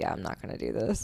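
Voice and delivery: casual, low, soft, creaky tone.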